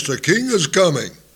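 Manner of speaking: acted very loud shout in herald voice. Speaker acting out a herald announcing a king's arrival, acting out a very loud shout. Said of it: "they would shout with a very loud voice".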